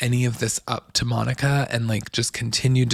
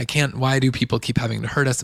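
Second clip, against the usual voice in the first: put-on tearful voice. Retelling a reality show scene, quoting Meredith: imitating Meredith crying. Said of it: "she's crying and saying".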